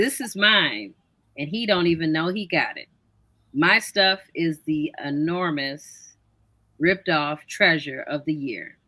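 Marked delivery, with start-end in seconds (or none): 0.0-0.9 insistent, firm, urgent. Speaker recalls a lover who nearly ran off with their stuff, retelling a shout. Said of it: "I'm shouting".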